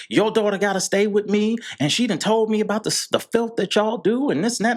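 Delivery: mock ranting woman's voice, really loud. Speaker selling ties and soaps retells a lady's outburst, imitating a really loud woman. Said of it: "really loud".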